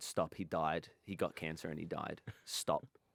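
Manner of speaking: acted sincere, dead-serious, earnest tone. Retelling own words to the front-row audience: retelling own earnest words. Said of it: "I earnestly turned to them and went".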